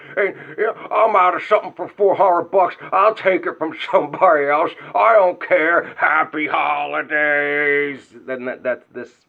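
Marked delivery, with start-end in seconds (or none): 0.2-8.0 very loud, high, brash put-on guy voice. Doing a dead-on impression of a loud guy: loud put-on voice of a guy. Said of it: "that is a dead on impression of how he talks".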